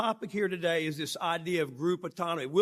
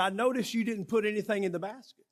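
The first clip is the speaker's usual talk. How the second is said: plain outside voice, not hushed; 3 semitones higher than usual. Retelling what the man beside him said at the meeting: imitating Don speaking loudly. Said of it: "he did not use his inside voice".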